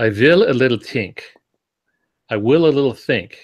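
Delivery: heavy put-on German accent. Retelling what he would say when hitting a problem: imitating heavy German accent. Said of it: "this little phrase in a heavy German accent".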